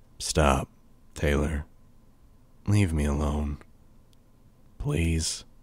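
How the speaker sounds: low, hushed voice, barely a whisper. A man stops without turning around and speaks to Taylor, low, barely a whisper. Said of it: "His voice was low, barely a whisper".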